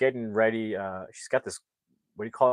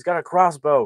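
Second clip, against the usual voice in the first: put-on scream, higher and louder; 5 semitones higher, 7 dB louder than usual. Retelling a movie scene where Twig panics after being shot: imitating someone screaming. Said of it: "Twig is screaming".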